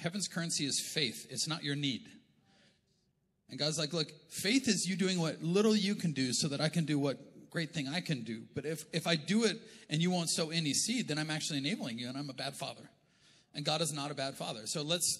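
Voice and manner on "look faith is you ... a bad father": ordinary talk, nothing marked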